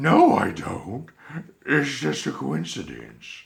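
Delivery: very loud, high, sing-song animated character voice. Denying sounding like Trevor, still as Bunny Bear: Bunny Bear character voice. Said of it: "his friend Bunny Bear is joining me as a co-host".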